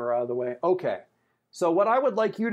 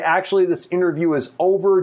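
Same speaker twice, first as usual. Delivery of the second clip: normal talking voice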